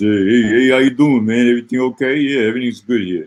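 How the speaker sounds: put-on loud Bronx New York street accent. Describing an old friend from the Bronx, the speaker imitates Richie Gold's Bronx accent. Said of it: "He talks like this".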